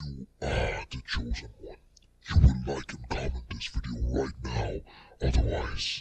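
very deep, echoey, menacing demonic voice. Tutorial previewing a processed voice effect, evil demon voice. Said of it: "make your voice sound like an evil demon ... give like a more echoey effect".

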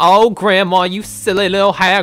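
put-on granny voice. Picking up mushrooms, the speaker keeps talking in a grandma voice. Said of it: "still in Grandma's voice".

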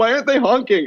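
put-on very high-pitched, tearful, crying child voice. Retelling asking her mom from the car's back seat, imitating her own crying. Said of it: "like crying".

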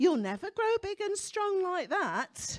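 small telling-off parent voice. Describing a child who wants to go and play, imitating a parent's voice. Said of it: "a little voice from a parent go".

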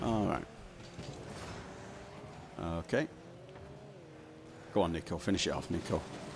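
hushed urging.

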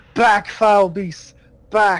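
desperate, frantic, jittery cry. A player holds out a cross at a beast to cast a spell, screaming. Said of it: "And I'm just like, screaming".

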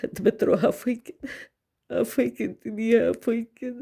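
crying, tearful. A mother speaks to her son, crying. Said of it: "Вибач, що я плачу".

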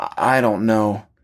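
broken-up words in halting, stopping-and-starting bursts. Bobby, asked by her whether it was a seizure, answers, words in little bursts. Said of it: "the words coming out in little bursts".

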